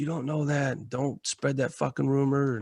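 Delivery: mock angry, stern, mad tone. Retelling the team leader's reply to bad news: imitating an angry team leader. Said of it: "And he got mad".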